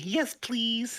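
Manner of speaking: mock very high, bubbly, chirpy voice. Retelling a wrestler's reply in the ring: imitating AJ's bubbly "yes please". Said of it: "the most bubbly".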